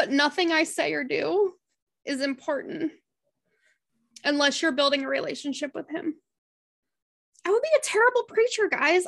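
crying while talking. Telling a book club to spend time in the Bible, crying while talking. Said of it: "no idea why I'm crying right now".

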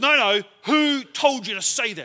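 loud, slow, hostile, aggressive, confrontational delivery. Retelling how a stranger snapped back at Don, imitating a real aggressive retort. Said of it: "real aggressive".

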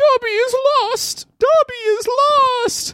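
very high, squeaky elf voice, with "lost" drawn out. Asked during a reading what Dobby sounds like, answering in Dobby voice. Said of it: "What does Dobby sound like?".

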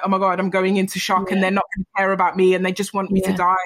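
plain

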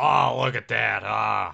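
slow, rough, loud, creaky drawn-out drawl. Imagining being a wrestler's heel manager, doing a Bobby Heenan impression. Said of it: "I'd be like Bobby Heenan".

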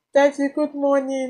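very high, fake, tearful sobbing voice. Retelling forcing herself to greet her daddy one morning, fake sobbing. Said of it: "this is a fake imitation of how I cry".

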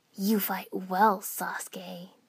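raspy delivery. Narrator reading a man's line to sasuke as he steps forward, rasping. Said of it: "he rasped".

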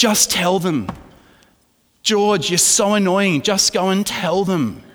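play-acted, impassioned, high-pitched screaming yell. Retelling yelling at George while watching him, acting out passionate screaming. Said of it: "With my most passionate voice, I'm sitting there screaming".

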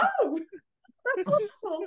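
very high, thrilled, swooping sing-song gush. Retelling a comedy scene, imitating Michael Palin sounding excited. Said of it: "so excited when one of them says".

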